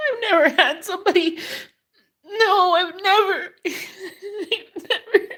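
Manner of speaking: crying, very high, tearful, voice cracking. After retelling what he said about already healing, crying, voice breaking. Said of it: "I can't stop crying".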